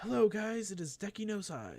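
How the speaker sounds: high, loud belted "hello". Imitating a Let's Play YouTuber's greeting: bad Deki no Sai impression. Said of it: "such a bad, uh, impression of it".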